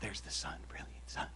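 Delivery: put-on restful, calm painter voice. Recalling how a man drew pictures: imitating a restful painter's voice. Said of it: "Just trying to do his voice a little bit".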